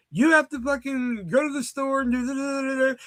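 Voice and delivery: very high, playful, fooling-around joking yelling rant. Retelling yelling at a sister about going to the store: imitating own yelling. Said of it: "I'm yelling at my sister".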